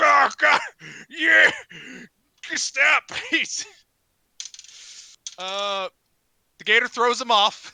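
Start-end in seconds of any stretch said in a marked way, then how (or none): 0.0-3.1 high, loud pained yelling. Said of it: "It's like".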